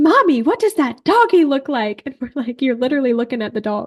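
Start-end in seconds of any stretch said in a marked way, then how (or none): 0.0-2.0 put-on loud, high-pitched little-kid voice, blurted out. Retelling how a little girl talks in the middle of the store, imitating a child talking loudly. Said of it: "She just talks really, really loud".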